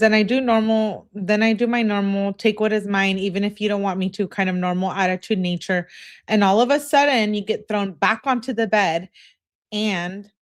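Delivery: ordinary talk, nothing marked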